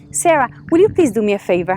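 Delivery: ordinary delivery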